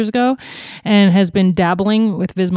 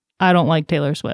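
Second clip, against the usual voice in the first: mock deadpan delivery, lower pitch; 3 semitones lower than usual. A mother retells what her daughter told her this morning: retelling a deadpan line.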